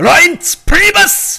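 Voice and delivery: very high, loud, rough, furious angry bark. Saying a name that sounds german to her: angry "reince priebus". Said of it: "You just can't help but say it in an angry voice".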